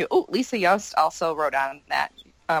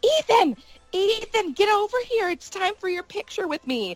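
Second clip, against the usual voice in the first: mock scream, much higher and slower. Recalling a man at a buffet calling her son over, retelling a scream. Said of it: "he starts screaming".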